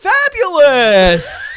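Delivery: swooping shrill cry, very high, loud, drawn-out. Retelling a father getting a cab: imitating dad's feminine "Fabulous!". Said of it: "and he went".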